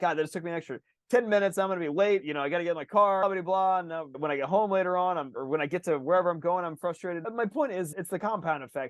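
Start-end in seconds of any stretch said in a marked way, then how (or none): none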